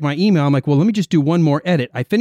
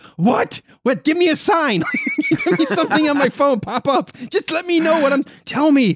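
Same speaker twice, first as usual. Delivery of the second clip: mock high, shrill yelling; 10 semitones higher than usual. Retelling forgetting why they picked up the phone: retelling yelling at self. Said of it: "I'm yelling at myself".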